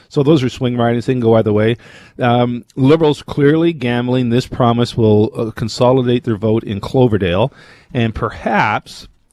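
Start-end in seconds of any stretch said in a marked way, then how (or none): 7.9-9.0 perhaps stressed and drawn out slowly. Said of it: "and I stress the word perhaps".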